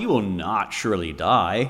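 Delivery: mocking, scoffing, dismissive tone. Speaker reading scripture gives Satan's reply to the woman: scoffing. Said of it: "Can you hear the scoffing in Satan's voice?".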